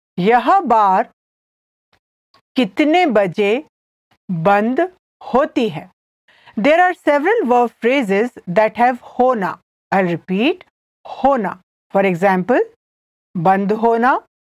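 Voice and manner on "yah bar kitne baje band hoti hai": careful, slow, halting, broken-up phrasing. Hindi teacher repeats a sentence for listeners, slowly. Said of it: "I'll say it again slowly".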